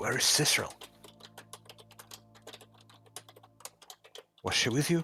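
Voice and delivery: secretive whisper close to the ear. Whispering into another character's ear during a conversation: whispering in character. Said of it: "I'll whisper to Nil's ear".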